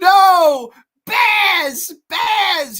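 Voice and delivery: shrill, very loud yell, no stretched out. Retelling a movie scene, imitating Christopher Walken shouting. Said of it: "Christopher Walken shouts".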